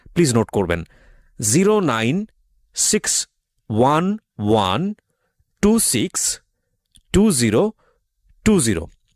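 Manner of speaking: unhurried pace. Repeating a booking phone number for listeners to note down, speaking slowly. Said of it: "আবারও বলছি এবং ধীরে ধীরে বলছি".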